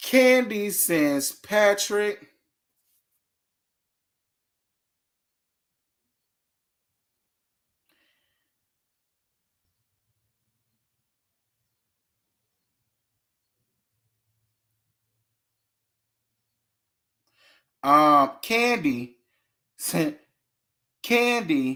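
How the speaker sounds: fighting back laughter in the middle of speaking. Telling listeners a story, holding back laughter. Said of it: "I'm trying not to laugh".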